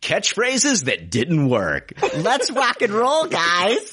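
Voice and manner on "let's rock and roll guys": very high-pitched, nasally put-on voice. Repeating a catchphrase that didn't work in front of the woman who said it, in a mock-nasal Stephanie imitation. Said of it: "Did I sound that nasally?".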